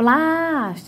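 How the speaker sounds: long, heavy stress on first syllable plás in plástico. Portuguese lesson on tonic syllables, saying plástico with drawn-out stressed plás. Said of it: "a minha primeira sílaba da palavra plástico foi a que mais teve tonicidade".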